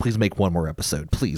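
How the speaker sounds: put-on begging. Joking about a 2009 reality TV show that does not exist, mock pleading. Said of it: "I'm pleading".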